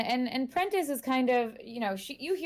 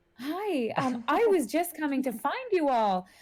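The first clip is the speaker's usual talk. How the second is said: put-on sweet grandmother voice, higher; 4 semitones higher than usual. Voicing a grandmother greeting the players with a sweet smile: Marjorie Prentice, sweet grandmother. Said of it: "sweet grandmother smile".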